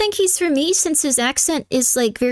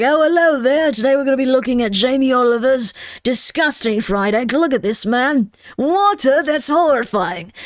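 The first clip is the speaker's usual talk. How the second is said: British comedian-style delivery and phrasing. Imagining the man presenting a cooking video, in British comedian-style delivery. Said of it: "that sounds very British comedy".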